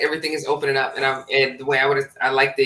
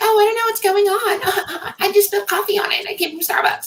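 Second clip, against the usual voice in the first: put-on very high, playing-dumb, ditzy, clueless girly voice. Acting out a clueless girl handing in a broken laptop: mock clueless pretty girl voice. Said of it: "that pretty girl kind of bullshit where you walk into somewhere and be like".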